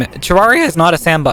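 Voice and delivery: breaking voice, cracking midway. Correcting a claim while talking about games, voice cracking. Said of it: "My fucking voice cracked there".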